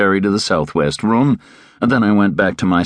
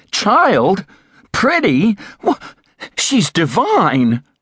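very high, drawn-out, swooping outcry; 12 semitones higher than usual. Terence, staring at the narrator, answers the remark about Elena: crying out. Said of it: "cried Terence".

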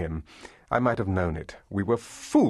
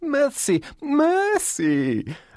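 shrill, gleeful, swooping squeal, pitched way up. Arthur, being whipped while polishing boots, shrill and gleeful. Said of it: "Arthur's voice was shrill and gleeful".

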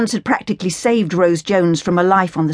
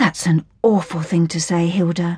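plain reading voice

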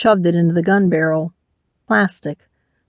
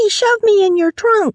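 piercing, very high-pitched, shrill screech. Narrator reads a woman's complaint after being thrown into a trunk; screeching. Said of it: "she screeched".

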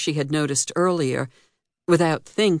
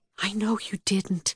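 soft, hushed whisper; 4 semitones higher, 7 dB quieter than usual. A woman answers the man who caught her in his arms, whispering. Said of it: "she whispered".

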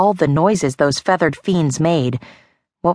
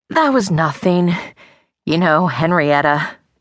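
nervous voice, masking fear, trying to sound unafraid. Asked by his father if there is a problem, he answers, hiding fear. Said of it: "trying his best to hide his fear".

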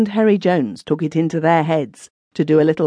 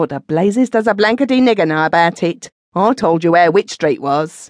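fierce, sharp tone. Narrator reading a man turning on another in an argument, fierce. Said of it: "Their leader, [name] Orming, had served 7 years for bashing a Chinaman down at Rotherhithe".

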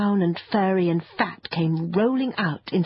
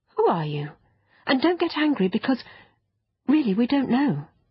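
kind, reassuring, gentle voice, pitched up; 6 semitones higher than usual. Anthea asks the bristling creature who it is, kindly. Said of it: "still kindly".

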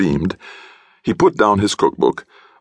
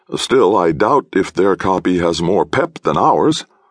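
ordinary delivery

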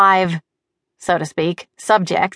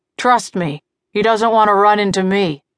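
snarling, growled. Narrator reads a man answering a question about the pilot; growled. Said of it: "he growled".

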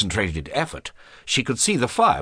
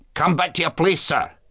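strict, stern, pitched-up schoolmaster voice; 8 semitones higher than usual. The master orders a boy back to his place in class, stern. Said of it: "cried the master sternly".

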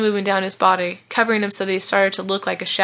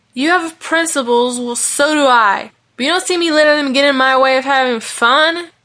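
hot-tempered, loud, high-pitched yelling; 5 semitones higher, 5 dB louder than usual. Vaughn, arguing with his friend Malachi, answers him yelling. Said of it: "yelled Vaughn".

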